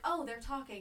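ordinary talk, nothing marked

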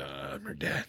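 muttering under breath. Retelling a father's aside about his daughter, retelling words under his breath. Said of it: "And then under his breath".

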